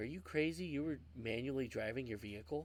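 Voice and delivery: plain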